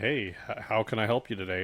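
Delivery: ordinary delivery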